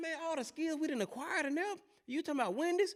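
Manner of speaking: high, incredulous voice. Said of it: "I said".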